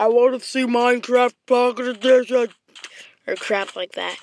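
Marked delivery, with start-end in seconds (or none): 0.0-2.5 loud, really silly, stupid put-on voice. Mimicking a vague request, in a really stupid put-on voice. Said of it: "I know that's a really stupid voice".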